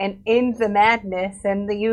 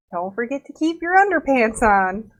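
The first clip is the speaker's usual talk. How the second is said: confiding, private aside tone; 2 semitones higher than usual. Leaning over to another character to speak privately: saying quietly. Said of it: "I say this quietly with him".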